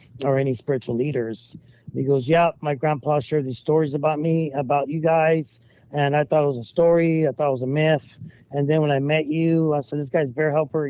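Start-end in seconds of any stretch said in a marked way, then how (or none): none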